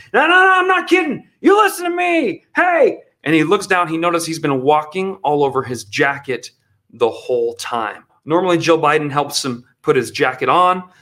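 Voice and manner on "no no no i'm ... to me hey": put-on high, grumpy old-man voice, yelling. Describing a speech where Joe Biden yelled at the crowd, imitating Joe Biden yelling. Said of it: "yelling at the crowd like he does with the old man thing".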